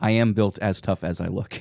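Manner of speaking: put-on deadpan delivery. Retelling a game scene, quoting Ziggy's reply: imitating Ziggy's deadpan delivery. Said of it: "Ziggy has a great deadpan delivery here".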